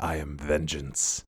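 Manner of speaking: very deep, dropped-down gravelly-low voice. Show how he switches from his Bruce Wayne voice, doing his Batman voice of the night. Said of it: "his Batman voice, his voice of the night".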